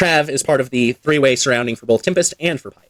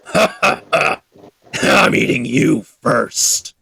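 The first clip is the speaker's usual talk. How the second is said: rough, creaky, gloating monster voice. Game master voices an unseen speaker calling from the woods: booming voice. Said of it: "as the voice kind of booms out".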